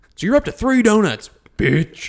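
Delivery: high, loud, mock demanding voice.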